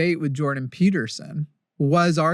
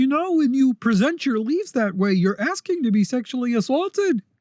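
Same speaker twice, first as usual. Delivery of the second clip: frog-puppet character voice; 9 semitones higher than usual. Imagining someone debating a bird in a hospital room: sounds like Kermit the Frog. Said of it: "he literally is Kermit the Frog".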